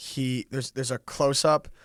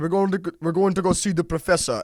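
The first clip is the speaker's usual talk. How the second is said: mock clumsy Russian accent, pitched up; 6 semitones higher, 7 dB louder than usual. Retelling a Deadpool scene, quoting Colossus dragging Deadpool away, terrible Russian accent. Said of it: "sorry, terrible Russian accent".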